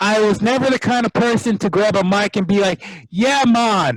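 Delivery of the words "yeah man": fake, put-on reggae-style accent. Describing what they never did on the mic, fake reggae accent. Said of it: "you breaking out accents".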